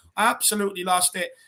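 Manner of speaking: usual speaking voice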